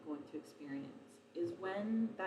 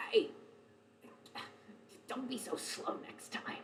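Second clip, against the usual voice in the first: put-on breathy whispered croak in a very old voice; 7 semitones higher than usual. Narrator voicing a voice heard in a character's head: croaking very old voice. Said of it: "a very old voice, croaking as if it's a voice that's been shouting".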